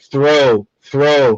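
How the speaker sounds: ordinary talk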